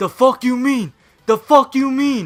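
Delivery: very high-pitched, shrill, repeated yelling. Retelling how a guy confronted their buddy Matt over jeans, imitating the guy shouting. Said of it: "the guy just starts shouting".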